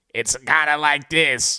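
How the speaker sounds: put-on slow old-movie old man voice. Describing how old people in movies talk, the speaker demonstrates that old-movie voice. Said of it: "Like they have that certain voice".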